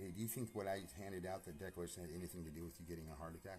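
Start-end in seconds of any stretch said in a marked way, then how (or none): none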